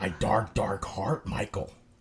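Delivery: hellish, damned character voice. Thanking listeners from a cold, dark heart: Kevin from The Office voice, gone to hell. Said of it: "Kinda sounded like Kevin from The Office if he went to hell".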